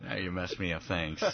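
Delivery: low, soft mock grumble through laughter.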